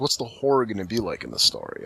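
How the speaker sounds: normal talking voice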